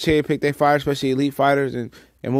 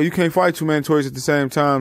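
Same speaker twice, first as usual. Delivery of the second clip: ordinary talk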